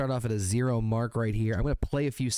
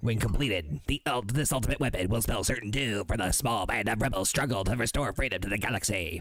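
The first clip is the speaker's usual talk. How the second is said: put-on alien character voice. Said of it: "I turned into a different voice character halfway through".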